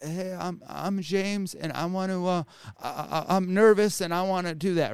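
shy, very slow delivery. Retelling James speaking up in a Clubhouse room, imitating James, all shy. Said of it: "all shy".

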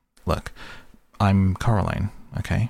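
ordinary delivery, nothing marked

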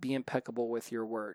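ordinary delivery

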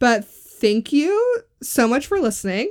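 rising, question-like intonation on "listening". Podcast host thanking listeners at the end: said like a question. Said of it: "Why'd you say it like a question?".

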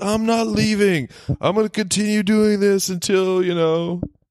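put-on very high, slow, stretched-out shouting. Retelling a movie scene where a snake is yelled at: imitating Bruce Willis yelling. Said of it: "He pretty much yells at the snake".

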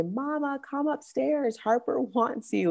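put-on high, soft child's voice, calling out.

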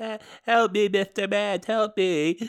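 put-on young child crying, sobbing little kid voice. Game narrator voicing a young child begging for help, young child crying. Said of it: "there is a young child crying".

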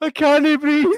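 acted-out screaming laughter. Retelling being unable to stop laughing while a stranger stared: retelling screaming with laughter. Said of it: "I'm like screaming with laughter".

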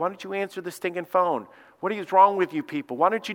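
mock heckling yell, imitated, restrained and held back. Retelling what people in line shouted at the employees: imitating people yelling. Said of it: "They were just yelling at me".

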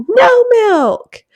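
play-acted, very high, very loud toddler tantrum scream. Retelling a daughter flinging her milk away: imitating a toddler screaming. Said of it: "throws and screams".

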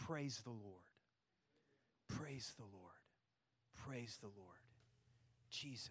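soft, hushed, unvoiced whisper, repeated three times. Leading the standing people in whispering the words together: whispering. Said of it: "I want you just to whisper".

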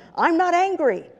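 put-on, very high-pitched, worked-up, insistent, agitated voice. Retelling a husband's repeated reply to his wife's question, in mock-agitated denial. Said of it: "in an increasingly agitated tone".

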